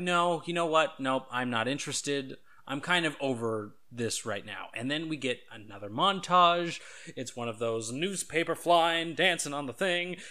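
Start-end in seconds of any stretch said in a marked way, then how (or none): none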